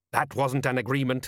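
ordinary delivery

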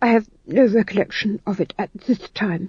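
falling off into a murmured mumble. Narrator reading the Duchess's husband's line, falling to a mumble. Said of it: "His voice fell to a mumble".

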